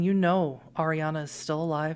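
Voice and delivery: ordinary delivery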